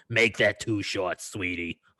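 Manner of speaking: put-on elderly woman voice with a smoker's sound. Joking with a co-speaker about a bad flight: old smoker lady voice. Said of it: "old smoker lady voices".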